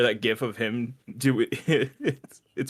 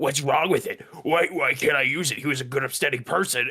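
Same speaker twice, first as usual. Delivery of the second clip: put-on demonic woman voice, higher; 3 semitones higher than usual. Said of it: "she just gets the Meat Canyon voice".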